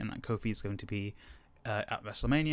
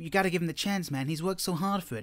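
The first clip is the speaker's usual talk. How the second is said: put-on, pitched-up anime hero voice; 6 semitones higher than usual. Speaker acts out what some people said coming in, in an anime voice. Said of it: "This is my anime voice".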